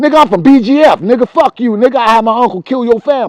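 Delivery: put-on schoolkid voice, tough, taunting, yelled. Retelling what a kid from the block yelled: imitating a kid yelling. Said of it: "He's yelling on the block".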